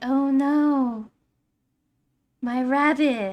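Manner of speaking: very slow, calm, shy voice, not drawn out. Describing the ponies one by one, imitating Fluttershy in a soft, calm Fluttershy voice. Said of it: "she kind of talks like this, like very softly, very calm".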